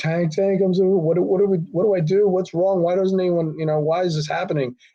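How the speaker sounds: tearful, stumbling, sobbing, broken voice. Retelling how a crying kid pleaded for help: imitating someone crying. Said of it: "he starts crying on my shoulder".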